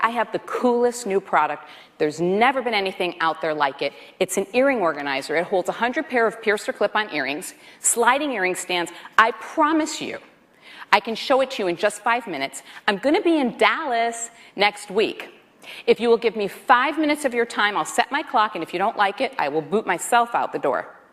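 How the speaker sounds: normal talking voice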